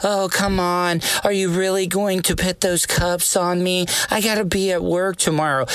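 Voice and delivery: put-on helpless, babyish damsel-in-distress voice. Mocking women about to go to jail, in mock damsel-in-distress baby voice. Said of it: "that damsel in distress baby voice".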